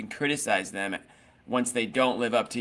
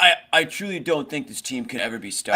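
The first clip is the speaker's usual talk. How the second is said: ordinary talk, nothing marked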